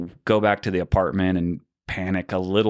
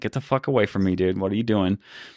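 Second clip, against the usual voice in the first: mock-irritated, acted aggravated tone. Retelling a kid taking his phone, acting out getting aggravated. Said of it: "I start getting like a little bit aggravated".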